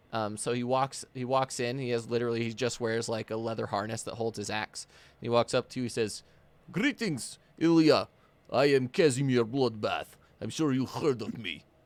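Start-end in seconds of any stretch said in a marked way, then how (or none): 6.7-11.6 loud half-orc, half-giant character voice. Voicing a half-orc, half-giant greeting a player character: half-orc half-giant character voice. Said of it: "Casimir is a half orc".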